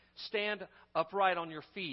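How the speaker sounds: usual speaking voice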